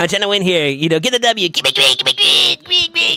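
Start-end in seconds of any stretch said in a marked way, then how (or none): 1.5-3.2 tiny, very high, silly little voice. Speaker, trying to win, does his bit, imitating Crafty's little voice. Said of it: "the little voice I like to do".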